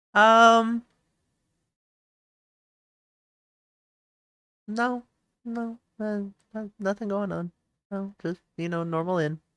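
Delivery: suspicious-sounding, shifty tone. Asked if anything interesting is around, giving a suspicious-sounding denial. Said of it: "You said that in a suspicious manner".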